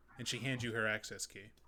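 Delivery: ordinary delivery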